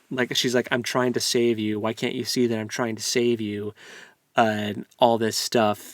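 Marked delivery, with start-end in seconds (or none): 0.7-3.7 mock begging, pleading voice. Retelling a book scene where a woman begs the heroine: imitating someone begging. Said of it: "begging her".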